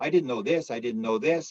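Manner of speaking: ordinary delivery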